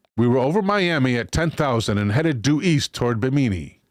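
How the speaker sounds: usual speaking voice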